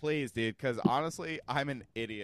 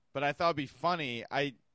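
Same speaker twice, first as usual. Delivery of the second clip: ordinary delivery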